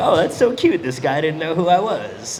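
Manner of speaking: put-on high, loud, cutesy cooing girly voice.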